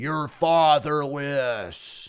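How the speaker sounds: "fatherless" in a put-on American accent. Showing another person how to say the word, in an American accent. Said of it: "say fatherless in an American accent".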